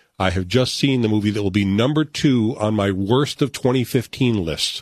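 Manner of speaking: ordinary talk, nothing marked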